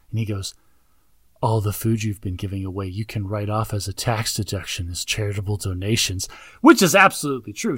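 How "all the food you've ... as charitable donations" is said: acted, intimate murmur, pitched lower. Retelling a movie scene, right up in her ear: imitating intimate speech in her ear. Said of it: "he gets right up in her ear, real intimate".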